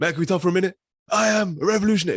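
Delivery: very high, loud, commanding, proclaiming voice. Showing how the actor's voice sounds in two films: imitating Daniel Kaluuya's commanding voice. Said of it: "His voice just sounds like".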